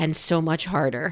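very soft, low mutter under the breath. Retelling an aside said after a reassuring remark: imitating muttering under breath. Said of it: "under my breath".

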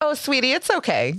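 sudden, high, honeyed, sugary sweet tone. Retelling a rude woman answering a man's apology, imitating her suddenly sweet tone. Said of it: "Like her whole tone, everything just changed".

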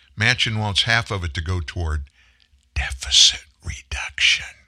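hushed whisper. Commentator on the reconciliation package shares a detail with listeners, whispered. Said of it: "I'm going to whisper this".

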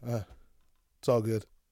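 put-on very calm, unbothered, easy tone. Retelling what a man on the toilet said: imitating a very calm reply. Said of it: "just very calmly".

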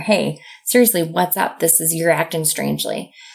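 ordinary talk

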